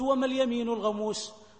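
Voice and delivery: ordinary talk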